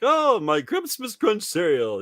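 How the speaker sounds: very high, squeaky cartoon voice with big swoops. Retelling a Christmas cereal commercial line in Cap'n Crunch voice. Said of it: "Captain Crunch is like".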